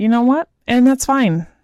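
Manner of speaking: high, loud, playful, lighthearted joking.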